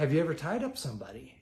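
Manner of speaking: ordinary delivery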